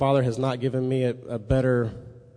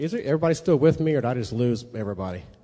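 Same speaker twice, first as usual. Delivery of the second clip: fast, rushed talking. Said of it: "I'm talking fast".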